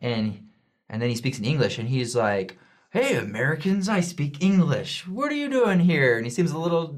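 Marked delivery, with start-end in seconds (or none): 2.9-6.2 put-on slurred, words running together, pitched up. Retelling what a man said in English to them: imitating slurred speech. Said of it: "his words are slurring".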